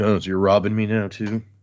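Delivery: put-on petty character mumble. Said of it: "petty, just in the corner, like, mumbling".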